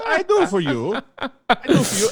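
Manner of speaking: put-on Italian accent.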